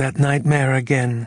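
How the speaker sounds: high-pitched. She asks Riley in the darkness, hand on his forehead, asked quietly. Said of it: "she asked quietly".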